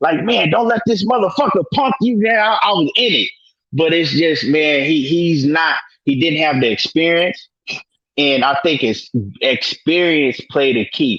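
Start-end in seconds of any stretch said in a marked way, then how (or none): 0.2-2.2 put-on, pitched-up hollering yell. Retelling yelling at the TV during a fight: retelling yelling at the TV.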